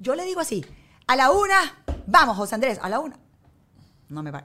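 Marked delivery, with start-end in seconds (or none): 1.1-3.2 put-on very loud, firm, no-nonsense mother voice. Retelling how she counts down to her son in her other mom tone: imitating own different mom tone. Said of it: "yo tengo un tono de voz ya apagando".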